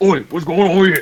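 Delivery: put-on loud, high-pitched orc voice. Voicing a bumbling half-orc walking up to someone in the scene, orc voice. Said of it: "I gotta get my orc voice going".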